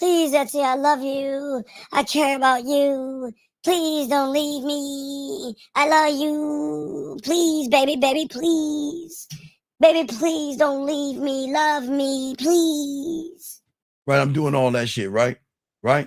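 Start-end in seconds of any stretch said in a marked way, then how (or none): 0.0-13.6 very high, slow, drawn-out bitchy voice. Speaker acting out a plea to etsy, redone in a put-on bitch voice. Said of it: "I gotta do it in a bitch voice".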